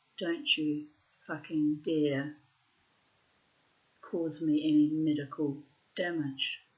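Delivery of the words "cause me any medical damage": ordinary talk, nothing marked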